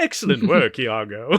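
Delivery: booming theatrical villain delivery. Retelling a scene where a character finds the lamp, in a Jafar impression. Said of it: "he does an impression of Jafar where he's like".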